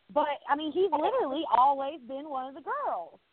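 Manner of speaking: plain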